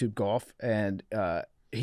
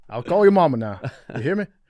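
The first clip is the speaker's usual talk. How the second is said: very loud booming cartoon rooster holler with wild swoops; 3 semitones higher, 8 dB louder than usual. Joking with co-hosts about Southern accents, a speaker does Foghorn Leghorn voice. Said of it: "Foghorn Leghorn".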